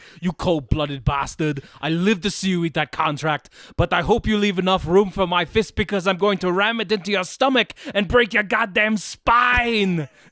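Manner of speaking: loud, breathless run-on yell until air runs out. Quoting a movie one-liner screamed while running out of breath: breathless Arnold Schwarzenegger scream. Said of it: "Arnold Schwarzenegger running out of breath".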